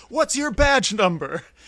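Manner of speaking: loud, high hollered call. Retelling calling out from the porch: imitating a shout. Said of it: "shout from the porch".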